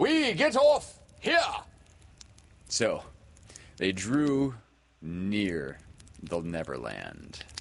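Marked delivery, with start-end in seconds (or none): 0.0-1.4 very high, loud, commanding captain's call. Narrating Peter, tired of sleeping, crying out in his captain voice. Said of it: "he would cry in his captain voice".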